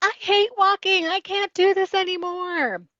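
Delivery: put-on shrill, very high child's screaming wail. Acting out him sitting down, refusing to walk, retelling a scream at top of lungs. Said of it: "he was screaming at the top of his lungs".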